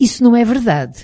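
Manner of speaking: annoyed, pushing back. Narrator voices a boy objecting to what was said, irritated. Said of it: "com os olhos brilhantes de irritação".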